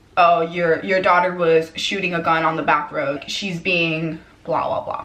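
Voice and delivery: ordinary talk, nothing marked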